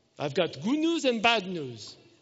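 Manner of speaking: put-on thick, heavy Russian accent, terse and swooping. Retelling a surgeon from Russia examining a spot before surgery: heavy Russian accent. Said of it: "he's got this heavy accent".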